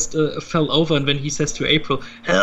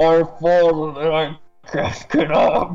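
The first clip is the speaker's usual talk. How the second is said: dark-lord movie villain voice, masked and armored. Describing a show scene where a toppled doll speaks, Darth Vader voice. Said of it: "in the Darth Vader voice".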